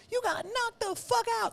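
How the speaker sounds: very high-pitched, rapid-fire, swooping comic delivery. Showing the only Chris Tucker impression he can do: Chris Tucker impression. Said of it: "the only Chris Tucker I have in me".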